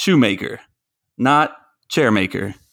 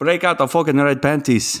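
poor Irish accent impression. Host trying his Conor McGregor impression again for a co-host. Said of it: "we're back to worse".

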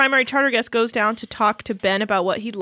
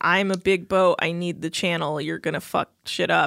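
put-on annoyed tone, lower-pitched; 5 semitones lower than usual. Retelling a captain's complaint about a sailboat: imitating annoyed Captain Lee. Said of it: "Captain Lee's all annoyed because he's like".

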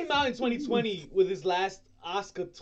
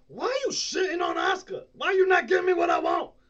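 high, loud, mock angry yell.

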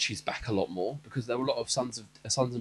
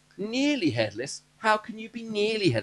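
very high, snobbish schoolgirl voice; 10 semitones higher, 4 dB louder than usual. Recounting the book scene meeting Nearly Headless Nick, in a Hermione impression. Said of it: "You sounded like Hermione then".

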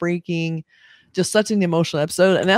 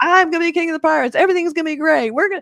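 put-on, very high, unabashed over-the-moon gushing cheer; 10 semitones higher than usual. Describing how a pirate character acts, imitating him: excited Luffy impression. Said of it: "Luffy is so unabashedly excited about everything".

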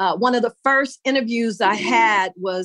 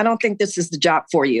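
fast speech, lower pitch, faster pace; 4 semitones lower than usual. Retelling what a man told her about a job, quoting him rapidly. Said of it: "And he said that so fast".

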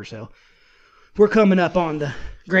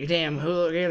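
usual speaking voice

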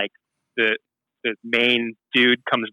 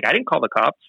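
put-on flat, straight-faced, unbothered tone; 3 semitones higher than usual. Retelling how Chubby Fresh denied calling the cops: imitating a flat denial with straight face. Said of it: "fully straight face".

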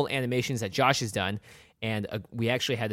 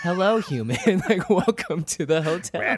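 high, loud, creepy voice; 7 semitones higher, 5 dB louder than usual. Podcast co-host showing how their greeting sounds creepier, in a creepy Shining twins voice. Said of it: "it sounds like twins from like The Shining".

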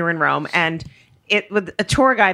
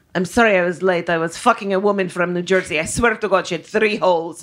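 bad, fake, put-on Italian accent. Retelling what he said in the minivan after showing up late; bad Italian accent. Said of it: "same bad accent, but now he's going to be Italian".

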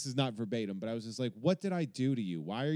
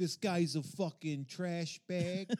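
put-on heavy Brooklyn accent, high; 6 semitones higher than usual. Retelling what Michael Rapaport said about a guy, Michael Rapaport impression. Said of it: "What accent were you trying to do?".

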